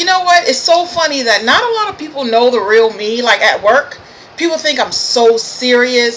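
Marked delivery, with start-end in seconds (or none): none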